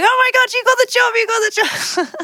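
piercing high-pitched screams. Retelling an agent's phone call with the job news: imitating Haley screaming. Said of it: "screaming down the phone at me going".

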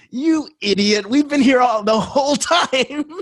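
very high, amused, laughing, put-on teasing voice. Retelling voices that answered by laughing: imitating laughing voices. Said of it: "they were all laughing at me".

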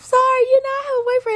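put-on, very high, polite voice. Speaker retells turning down a man's advances, retelling her put-on high-pitched voice. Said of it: "I did a high-pitch".

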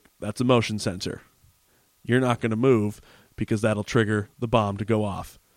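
normal talking voice

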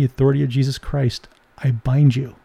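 put-on whispering. Retelling a command spoken quietly to a demonized person: retelling a whisper. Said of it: "And I would whisper".

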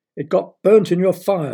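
curt, sharp, loud, high-pitched fatherly snap. Reading Rebecca's father answering her question about her dinner: snapped. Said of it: "snapped her father".

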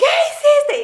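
mock yell, pitched very high. Retelling finding water poured into the blender with the yogurt; retelling a yell. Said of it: "Y le grité".

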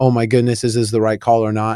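plain

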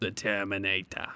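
bad, fumbling cyborg accent. Trying out an impression while talking about a favorite movie: bad Terminator accent. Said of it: "that was such a bad, uh, accent".

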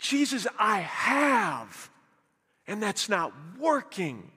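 put-on desperate pleading, the word have drawn out. Acting out a man's answer in a retold story, with mock desperation. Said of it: "you can hear the desperation".

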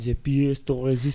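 gentle French accent. Asked to say the phrase again, more french but softer: softer, more french accent. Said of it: "Can you do it Frencher, but softer?".

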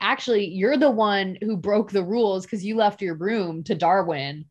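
normal talking voice

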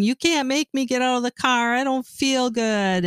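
mock high-pitched screaming teenage tantrum voice. Retelling a teenage kid in a van's back seat, imitating a screaming teenager. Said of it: "a teenage kid in the back seat that was screaming".

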